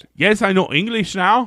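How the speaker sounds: mock, put-on Quebec French accent. Imitating a character discussed as speaking English with a French-infused accent. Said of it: "I can't do it".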